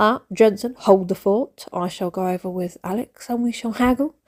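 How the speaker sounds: normal talking voice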